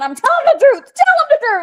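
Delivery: mock very high-pitched, shrill yelling. Speaker retells a man yelling over his dog and a sandwich, retelling a yell. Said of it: "he's yelling".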